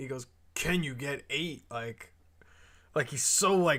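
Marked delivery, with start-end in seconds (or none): 0.5-1.6 mock angry tone, quieter. Retelling a chat argument, imitating someone pissed off. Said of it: "he's so, like, pissed off about it".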